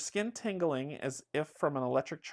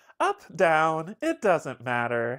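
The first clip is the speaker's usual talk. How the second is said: loud, bouncy, bubbly sing-song voice; 8 dB louder than usual. A game narrator voices the lift's ceiling speakers, bubbly voice. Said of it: "Oh, it's bubbly. Hold on".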